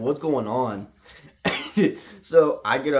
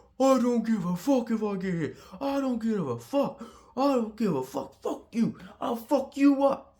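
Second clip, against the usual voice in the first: put-on very high-pitched, belligerent, drunken angry shouting; 11 semitones higher, 4 dB quieter than usual. Retelling what a drunk man in the road yelled: imitating a drunk man yelling angrily. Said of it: "other than yelling, being all mad".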